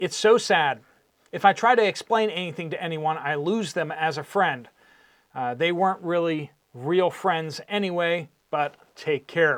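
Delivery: ordinary talk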